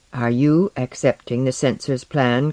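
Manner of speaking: plain reading voice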